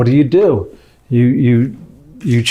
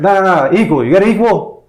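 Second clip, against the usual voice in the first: play-acted high, raised shouting; 7 semitones higher than usual. Ordering coffee, matching a loud man's volume: retelling own yelling. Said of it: "Suddenly, I'm yelling because he's yelling".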